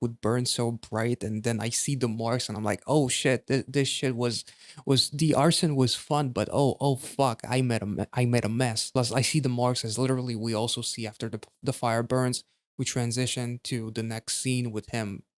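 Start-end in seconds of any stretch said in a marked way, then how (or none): none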